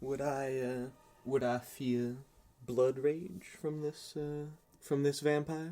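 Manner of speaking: put-on American Southern accent. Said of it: "I've been doing a southern accent".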